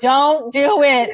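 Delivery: pretend screaming. Imagining spying on dates and screaming at the couples: mock screaming. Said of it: "screaming at people".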